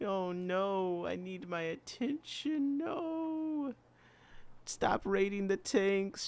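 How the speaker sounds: very high, slow cat voice. Speaking for the cat, who has just jumped up: voicing the cat. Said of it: "she says".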